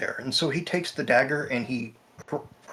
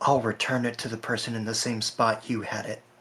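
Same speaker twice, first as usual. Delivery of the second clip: hushed whisper. The character leans down and whispers into another man's ear, whispering into his ear. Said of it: "leans down and whispers into his ear".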